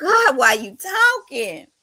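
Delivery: loud hollering yell. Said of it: "I was screaming at the T V".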